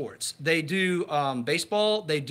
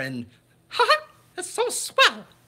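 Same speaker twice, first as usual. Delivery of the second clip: cartoon falsetto, much higher pitch; 13 semitones higher, 3 dB louder than usual. Talking about growing up on Disney movies, doing a Mickey Mouse falsetto. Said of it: "you got to get the falsetto in there".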